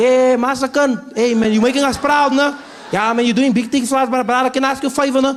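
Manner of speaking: put-on high, loud South African accent. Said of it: "Everyone said that".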